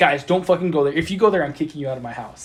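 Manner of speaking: acted angry, pissed-off outburst. Speaker retells what a friend's brother told his friends, acting out an angry warning. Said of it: "Like he was really pissed at them".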